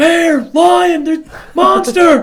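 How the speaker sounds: frantic, shrill, drawn-out terrified scream, very high, loud. Retelling how she ran into the house in panic: imitating someone screaming.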